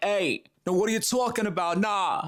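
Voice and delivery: pushy, direct New York accent. Imitating people from New York as aggressive: imitating a New York accent. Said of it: "I don't think that's quite the New York accent".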